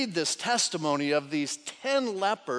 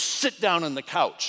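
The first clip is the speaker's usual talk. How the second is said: imitated stern voice. Retelling a father's warning to his quarreling sons: imitating a stern dad. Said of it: "very stern, very strong, didn't yell".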